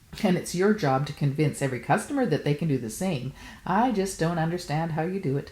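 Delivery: plain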